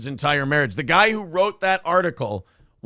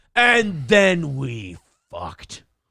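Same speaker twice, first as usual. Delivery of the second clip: slow, put-on angry tone. Telling another speaker about a trip, mock angry delivery. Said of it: "Why do you say it so angrily?".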